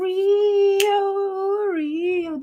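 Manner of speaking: very high, stretched, drawn-out pirate holler. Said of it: "That's the fuck I just sounded like".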